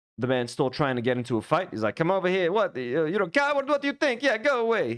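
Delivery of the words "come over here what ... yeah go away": pitched-up put-on Italian accent, combative. Retelling a man still trying to start a fight, put-on Italian accent. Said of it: "I'm making him sound Italian".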